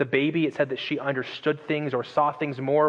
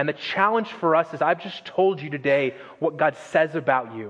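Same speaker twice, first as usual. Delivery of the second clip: plain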